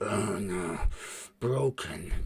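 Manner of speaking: low, faint, distant thrall voice. A storyteller voices a thrall heard in the distance, distant thrall voice. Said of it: "the distant sound of a thrall going".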